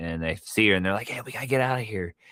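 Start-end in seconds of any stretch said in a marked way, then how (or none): 1.1-2.1 put-on whisper, higher. Retelling a film scene where kids sneak in quietly: imitating characters whispering. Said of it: "Why are you whispering?".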